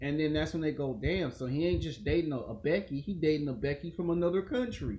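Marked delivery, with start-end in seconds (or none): none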